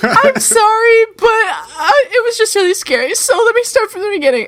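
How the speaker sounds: mock crying voice. Retelling a call to a manager after a scare: retelling own crying. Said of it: "I'm crying".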